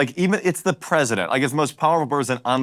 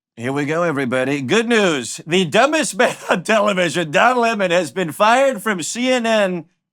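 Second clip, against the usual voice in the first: very slow, every word stretched, slightly high-pitched; 6 semitones higher, 3 dB louder than usual. Reading a president's tweet aloud to the guest: Donald Trump voice. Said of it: "read Trump's tweet to you in his voice".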